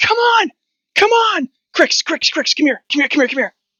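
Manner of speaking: frantic, very high-pitched panicked shout. Narrating a game scene, the speaker voices a character calling up to a bird: shouting up at the bird. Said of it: "he shouts up at the bird".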